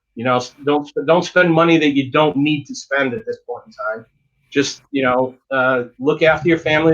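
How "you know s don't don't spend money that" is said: ordinary delivery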